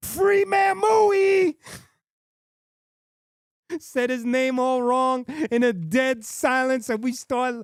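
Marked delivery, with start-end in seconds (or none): 0.0-1.6 very high, sudden yell, drawn out. Retelling how someone suddenly yelled into dead silence, retelling a yell. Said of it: "Destroy yells out".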